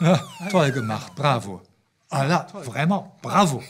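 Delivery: loud, sarcastic, put-upon bravo. Showing how a child who messed up the walls is ironically praised: ironic bravo. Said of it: "nous utilisons notre bravo de façon ironique".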